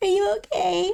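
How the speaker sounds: crying, voice pitched way up. Narrating Cherise answering his call, crying. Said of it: "you can tell she's already crying".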